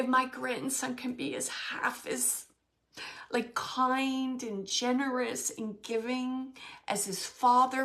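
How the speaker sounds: tearful, kind, drawn out, fighting back tears. Quoting a grandmother's words about her grandson and his father, holding back tears. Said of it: "oh, I'm not going to cry".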